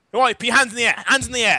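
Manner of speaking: loud, high, barking police-style shouting. A player's character advances on a person with an SMG, yelling commands.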